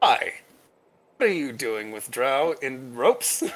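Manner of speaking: strained, tense, forced-friendly polite tone. A guard at a festival questions a dwarf and human holding Drow captive; strained, forced-friendly tone. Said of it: "His his his smile is very strained".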